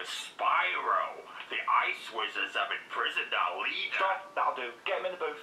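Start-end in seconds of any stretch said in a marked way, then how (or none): 0.1-4.1 slow, growly put-on voice. Billy, told by his boss to read a line in his best growly voice. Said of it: "read this line in your best growly voice".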